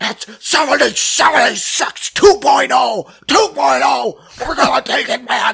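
put-on rambling drunken rant, loud and high-pitched. Retelling an election night clip of Alex Jones: imitating a drunk Alex Jones. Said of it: "you know he's fucking drunk".

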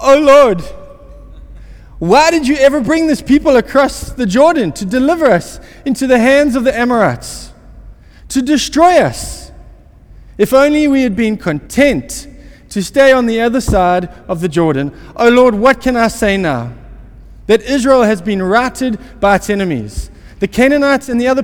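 whiny, complaining, high-pitched whining lament. Reading a Bible passage aloud, giving Joshua's prayer: whining as Joshua. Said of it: "I'm going to do my best whining voice here".

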